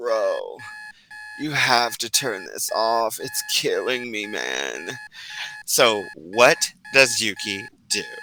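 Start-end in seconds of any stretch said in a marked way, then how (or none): 0.0-4.9 sleepy, groggy voice, lower, quieter and slower. Acting out someone behind you reacting to a blaring sound: groggy voice. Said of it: "you hear a groggy voice behind you like".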